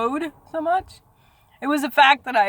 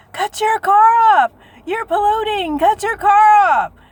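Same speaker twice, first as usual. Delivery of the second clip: loud, very high-pitched screamed yell; 9 semitones higher, 7 dB louder than usual. Retelling how a stranger yelled about their running car, imitating a man yelling. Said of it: "there's this guy yelling at me".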